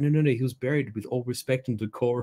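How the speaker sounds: cringing, abject, groveling, fawning tone. Retelling how the courtiers shrink back after Caesar's outburst: imitating groveling courtiers. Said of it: "almost groveling".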